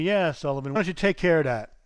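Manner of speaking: very dry, sarcastic, dismissive jab. Retelling the boss's reply to a suggestion: imitating a sarcastic boss. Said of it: "he just said very sarcastic to me".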